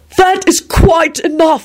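very high, ringing, loud shout. A wizard cuts off another's taunting of a captured wolf: shouted. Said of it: "Dumbledore shouted".

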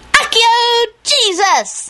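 shrill, sudden, very high, loud call-out. Narrator reads Teddy's line at a laughing Christmas Eve dinner table, piping up loudly. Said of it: "Teddy piped up loudly".

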